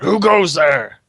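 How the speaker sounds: rough, gruff, loud yell. Storyteller voices one of the fellows hearing a horse step in a bear trap, gruff yelling voice. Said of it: "a real gruff voice kind of yells out".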